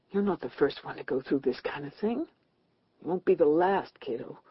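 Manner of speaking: softly muttering, quiet. Kathleen, dizzy in the waiting room, talks to herself: muttered softly. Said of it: "she muttered softly".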